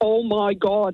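put-on heavy, broad Derry accent, laid on strong. Retelling a surprise meeting in a pub bathroom: imitating a thick Derry accent. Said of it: "in a really thick Derry accent".

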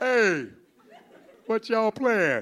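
put-on retro 1970s character voice. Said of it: "I have to use the 70s voice".

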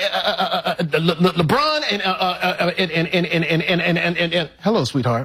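put-on stuttering voice. Imitating a dad who stutters when talking to family: imitating his dad stuttering. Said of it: "You see my Pops, he be like".

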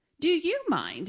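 loud, high-pitched, snapping-back tone. Jin answers a man over her spot at the table: retorting. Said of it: "Jin retorted".

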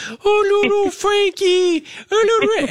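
very high, drawn-out puppy talk. Imitating one of the kids talking to the puppy: very high voice. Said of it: "talking to our puppy in a very high voice".

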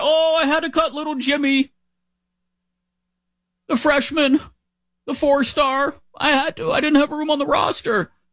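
very high, weepy whining. Mocking coaches complaining about roster cuts, imitating whining coaches. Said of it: "They're gonna cry".

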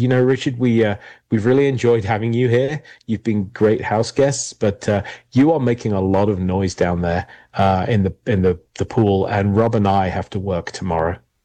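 ordinary talk

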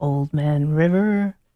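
really low, slow, booming voice.

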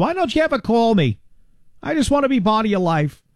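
high, put-on old New England grandmother voice. Radio host plays a mother not getting enough phone calls: New England grandmother voice. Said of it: "I don't know what that voice was I just did. New England grandmother?".

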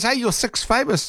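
very high-pitched hail, calling out across distance. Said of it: "He goes".

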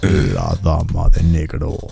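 thick deep voice.

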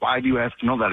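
plain

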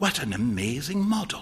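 hushed, soft half-whisper. A young man greets his friend with a handshake, half-whispering. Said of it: "whispered [name]".

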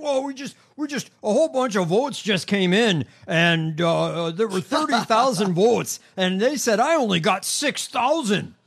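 high, loud, slow, drawn-out delivery. Retelling a candidate's late-night vote reports: imitating Mike Lindell. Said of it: "he's like".

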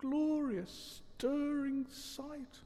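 very quiet, very high, soft murmur. While the rat demands his help, Toad stares after the motor car, murmuring. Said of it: "murmured Toad".

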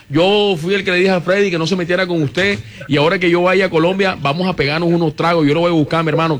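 ordinary delivery

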